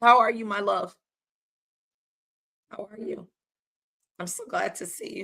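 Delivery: voice struggling, giving trouble. Livestream host greeting a viewer who reposted, struggling with voice. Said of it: "I'm struggling with my voice here".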